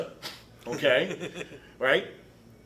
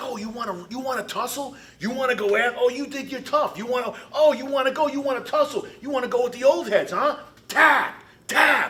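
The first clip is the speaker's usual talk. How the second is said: loud, high-pitched screaming, taunting tone; 8 semitones higher, 5 dB louder than usual. Retelling a fight, imitating own past yelling: retelling screaming at someone. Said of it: "and I'm screaming at him".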